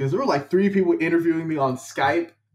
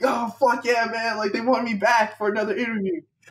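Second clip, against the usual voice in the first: thrilled, giddy, excited whoop; 6 semitones higher than usual. Recalling being called back for a second interview, the speaker retells an excited scream. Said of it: "I'm just like screaming".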